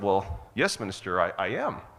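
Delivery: ordinary talk, nothing marked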